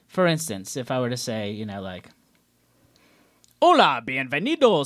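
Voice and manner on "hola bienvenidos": put-on loud, booming show-host announcer voice. Showing the announcer voice they always have to use: booming announcer voice. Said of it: "I always have to use my announcer voice".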